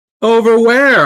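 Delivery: very high-pitched, loud shouting. A player calls out to a distant figure beckoning him over: really loud. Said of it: "I say really loud".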